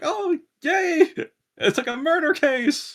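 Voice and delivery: very high, very slow, drawn-out excited glee. Describing a detective character reacting to a death: imitating an excited character. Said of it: "they're excited".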